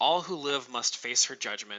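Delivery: ordinary talk, nothing marked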